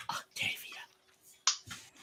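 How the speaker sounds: slow, soft whisper. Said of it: "I will whisper".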